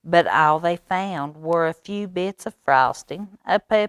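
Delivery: ordinary delivery, nothing marked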